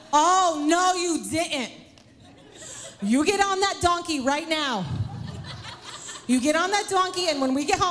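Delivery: high, scolding, put-on New York mother voice. Acting out a quoted line in a retold story: New York accent. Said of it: "I don't know why she just went into New York".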